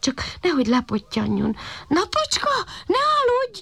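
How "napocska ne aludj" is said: very high-pitched shout, calling out upward. A puppy floating up in the sky calls to the sun, calling out. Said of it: "Kiáltott a kiskutya".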